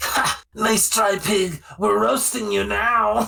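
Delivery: very high-pitched, cackling, jeering taunt. Game master voicing the creatures behind the door after a roll: cackling voices. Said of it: "you hear cackling voices".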